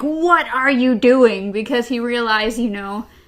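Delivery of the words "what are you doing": loud, drawn-out screaming yell. Retelling a character's outburst at another character: imitating someone screaming. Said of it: "is literally screaming at him, like".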